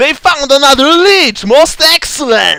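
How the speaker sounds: very high, loud, shrill, thrilled excited screaming. Game narrator tells a player they hear Jekyll from the front boat, Jekyll screaming. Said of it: "You can hear Jekyll screaming".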